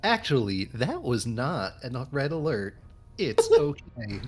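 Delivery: slow, machine-like text-to-speech voice. Showing how a copied character voice would sound: TikTok AI voice. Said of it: "it's like the TikTok A I voice".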